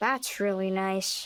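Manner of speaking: disappointed. Replying to someone who came to care for their grandma, disappointed. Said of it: "You sound disappointed".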